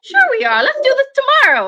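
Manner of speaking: very high, animated sing-song. Retelling a partner pushing to start: imitating Doctor B. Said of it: "that's my impression of Doctor B".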